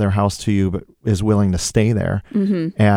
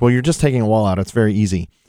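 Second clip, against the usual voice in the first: ordinary talk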